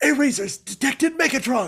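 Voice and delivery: frantic high hissing voice. Imitating a received transmission, frantic, nervous Airazor voice. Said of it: "frantically, like he's like nervous".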